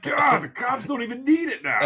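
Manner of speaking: high-pitched, irritated ranting.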